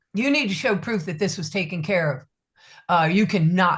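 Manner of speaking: put-on tough-guy official voice, played heavy. Retelling what a customs officer told them, imitating an officer acting tough. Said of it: "he's trying to act all heavy".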